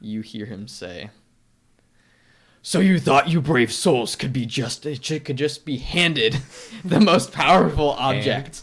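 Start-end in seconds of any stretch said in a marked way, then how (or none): 2.6-8.6 very loud, pitched-up demonic villain voice. In a tabletop game, voicing a figure addressing the brave souls, in a demonic voice. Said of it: "in a demonic voice".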